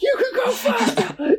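play-acted very high, slow, drawn-out scream. Imagining a toddler on the road, someone screams in your ear: imitating Connor screaming. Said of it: "Connor's screaming in your ear going".

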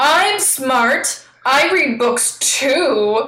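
put-on very slow, drawn-out, sulky, petulant kid tone. Sharing a favorite quote while discussing the jokes: imitating Mario, petulant. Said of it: "Mario petulantly saying".

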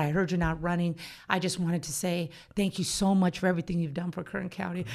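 normal talking voice

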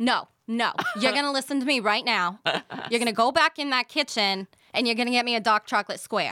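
put-on New York mother voice, Brooklyn accent. A guest shows the hosts her favorite accent to do, in a brooklyn mom accent. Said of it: "I love the Brooklyn mom accent".

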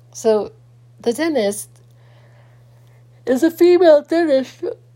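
halting, high speech broken up by a yawn. Telling a story about a dentist visit, speaking through a yawn. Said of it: "Sorry about my yawning".

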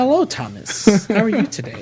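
very loud, swooping woman voice.

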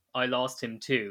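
ordinary talk

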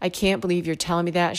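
mimicked tearful speech. Retelling a mother's reply after hearing she's a good mom, imitating someone crying. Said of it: "as she's crying".

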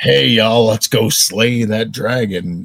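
Western cowboy-style American accent. Giving an example of a D&D character line, cowboy accent. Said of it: "It's like you're a cowboy".

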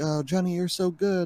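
mock non-native English. Retelling what a viewer said on stream: imitating broken English. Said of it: "he kinda spoke a little bit of broken English".

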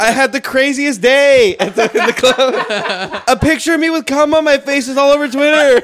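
shrill, stressed-out, very high, loud yell. Retelling what a character says at the club: imitating someone yelling. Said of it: "It's like, yelling".

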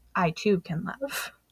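soft, thoughtful, pensive, very hushed whisper. Retelling a story, the speaker gives Dracula's line to Harker as a pensive whisper. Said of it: "pensively and whispers".

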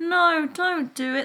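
weak, feeble, very high-pitched voice. Acting out a film character's objection to violence, mock-feeble protest. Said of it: "Like really feebly".

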